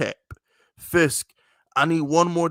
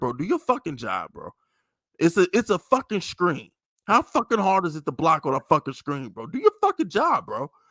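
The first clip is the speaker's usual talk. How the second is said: acted calm, casual cursing with swooping pitch; 2 semitones higher than usual. Retelling Kyler Murray cursing out the offensive line at dinner, imitating his calm cursing. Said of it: "Kyler Murray is so calm".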